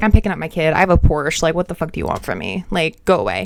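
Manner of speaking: fake careless, dismissive tone. Retelling how a father walks past the gate: retelling a careless, dismissive line. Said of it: "He didn't care. He's like".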